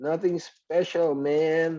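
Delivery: very high, acted-out shout. Speaker illustrating reported speech, replying to a friend on the street, retelling a shout. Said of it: "so I shouted back".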